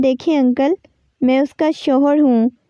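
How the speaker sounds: ordinary delivery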